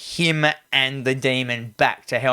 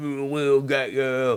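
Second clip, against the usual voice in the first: put-on horror-film demonic voice; 4 dB quieter than usual. Retelling what the demon voice said amid the wind and flashing lights, in demon voice. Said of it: "this demon voice is like".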